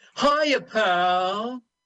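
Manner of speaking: high-pitched voice with the word pal drawn out. Imitating a movie character just mentioned: Munchie voice. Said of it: "that's the voice of Munchie".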